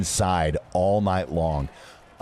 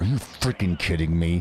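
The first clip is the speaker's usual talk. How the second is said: mock-angry voice through clenched teeth. Retelling what their dad said in the school hallway, through clenched teeth. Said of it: "you know where the clench your teeth one?".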